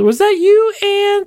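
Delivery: very high and slow, with words stretched long. Retelling asking relatives who ordered the drink: retelling dragging out the words. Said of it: "kinda drag out the word".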